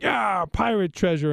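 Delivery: play-acted small boy calling out, high and light. Retelling how a son ran off acting like a pirate: imitating a child yelling. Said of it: "went off yelling".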